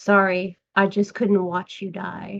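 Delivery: put-on in-character whisper. Turning to a fallen body after looking away: whispering to a dead body. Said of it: "turn to his body since I did look away and whisper".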